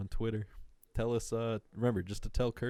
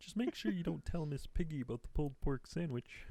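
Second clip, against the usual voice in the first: put-on puppet frog voice; 7 semitones higher, 4 dB quieter than usual. Ordering a pulled pork sandwich and wings: Kermit impression. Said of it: "peak Kermit when I could really do a good Kermit".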